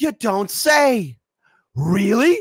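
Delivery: very high, very slow, drawn-out feigned shock. Mocking the corporate media by pretending to be shocked: pretend shock. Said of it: "pretend to be shocked".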